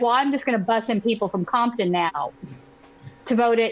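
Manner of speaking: normal talking voice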